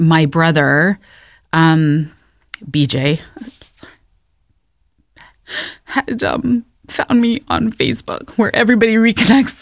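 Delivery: slow, deliberate, emotional delivery. Recalling a brother who reconnected on Facebook, getting emotional. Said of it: "I'm only getting emotional".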